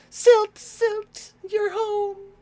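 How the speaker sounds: put-on very high, very loud, slow girly-girl voice. Voicing a family member greeting Silt at home, in River's high-pitched girly voice. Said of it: "Silt has a very high pitched girly girl voice".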